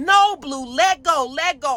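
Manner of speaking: screaming, slow and drawn out. Retelling pulling their dog off another dog: imitating own screaming. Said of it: "I'm screaming and yelling".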